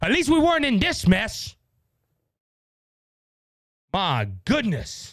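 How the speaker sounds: openly angry exasperation, swooping outburst. A speaker addresses audience members who did not vote for Donald Trump: angry. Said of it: "I am angry".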